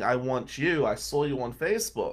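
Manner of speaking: imitated scream. Retelling how a client came into the office: imitating someone screaming. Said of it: "And he's screaming".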